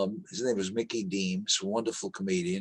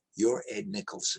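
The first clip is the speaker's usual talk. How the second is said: put-on, very quiet speaking voice. Retelling meeting a legendary show creator at an interview: imitating someone speaking very quietly. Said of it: "he very quietly said".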